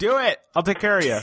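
high, loud yell calling out. Playing a character who calls out across a bar, yelling. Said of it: "I yell across the bar".

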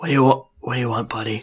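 put-on whisper. In a role-play, Fingers on the shoulder answers Smash: Fingers whispering.

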